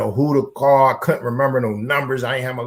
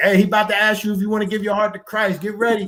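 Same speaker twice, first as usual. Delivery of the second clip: mocking put-on voice, pitched up, teasing; 8 semitones higher than usual. Retelling teasing the chaplain in the hole: imitating own mocking of chaplain. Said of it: "and I'm mocking him".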